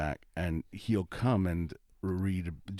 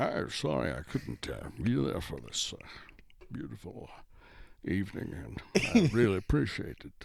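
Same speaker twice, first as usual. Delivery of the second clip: put-on Scottish accent; 3 semitones higher than usual. Retelling a phone call made in a Sean Connery impression. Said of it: "I do an impression of Sean Connery saying".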